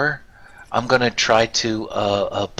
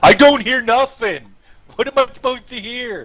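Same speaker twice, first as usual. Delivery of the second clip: fairly loud, very high-pitched, carrying voice; 13 semitones higher, 4 dB louder than usual. Answering through a door in the game: fairly loud voice. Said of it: "in a fairly loud voice".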